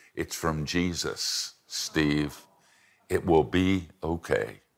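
slow, drawn-out, confiding stage whisper. Retelling what a girl whispered in the speaker's ear: imitating a whisper. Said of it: "she whispered in my ear".

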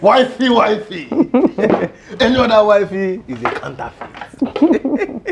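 worked-up, high, slow, laughing gush.

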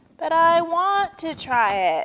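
high, whiny, drawn-out begging tone. Narrator reading a turtle character asking a vulture character again, whining. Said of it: "whined Turtle".

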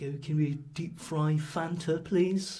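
put-on slow voice with an English accent. Retelling what English customers at a chip van asked: imitating English people. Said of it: "all the English people were like".

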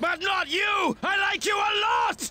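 overdone, cheery shout, high and loud.

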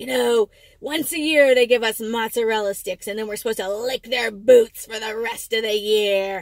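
sour, unhappy, bitter, resentful, grumbling voice. Retelling the older proofreader's complaint about the yearly treat: imitating a bitter complaint. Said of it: "bitter and unhappy".

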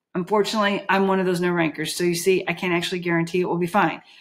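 plain reading voice

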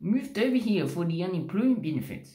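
bad New Zealand accent. Acting out a New Zealander stopped in a car: crap New Zealand accent. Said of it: "And I have a crap accent".

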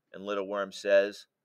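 plain reading voice

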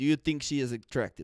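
put-on Ukrainian man accent, sounding Russian. Retelling what a ukrainian man asked him, put-on ukrainian accent. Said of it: "I feel like I'm sounding more Russian".

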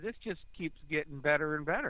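dry, clearly audible sarcastic tone. Recounting how a deputy treated someone, sarcastic. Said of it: "you heard the sarcasm in my voice there".

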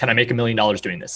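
plain

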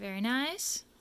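ordinary talk

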